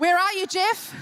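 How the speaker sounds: ordinary talk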